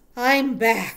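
very loud, hoarse, husky voice. Narrator reads Templeton the rat returning to the pen, in a husky voice. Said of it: "he said in a husky voice".

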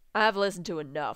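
plain

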